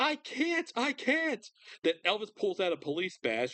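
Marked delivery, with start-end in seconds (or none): 0.0-1.4 very slow, very high, drawn-out panicked hysterical wail. Retelling the gate desk clerk's reaction at the airport; imitating hysterical screaming. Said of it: "get a little hysterical screams".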